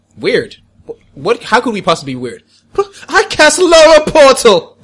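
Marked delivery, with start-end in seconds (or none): 3.1-4.6 intense, very high, slow, drawn-out, impassioned. A player announces casting a spell to the group, passionate. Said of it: "Why do you sound so passionate?".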